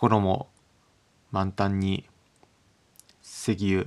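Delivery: completely flat, level delivery with no rhythm. Showing how a set phrase sounds said without rhythm: flat, no rhythm. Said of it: "ただ単に何もリズムなく".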